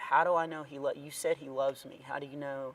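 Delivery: put-on very quiet voice. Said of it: "she said in the quietest voice I've ever heard".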